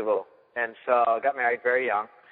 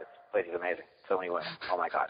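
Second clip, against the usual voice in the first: plain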